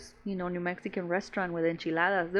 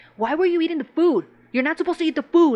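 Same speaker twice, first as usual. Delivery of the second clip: loud, high-pitched, angry yelling. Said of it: "she would be yelling at him".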